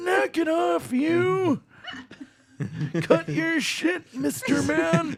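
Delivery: put-on high-pitched old man character voice. After saying he can't do Bane, the speaker shows off his old man voice. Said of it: "almost better than the actual Bane you tried".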